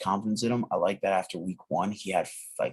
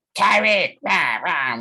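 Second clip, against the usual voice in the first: very high, very loud frog-puppet voice; 10 semitones higher, 10 dB louder than usual. Picturing a play for podcast listeners, the speaker does Patrick Mahomes's Kermit-like voice. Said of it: "with his fucking Kermit the Frog voice".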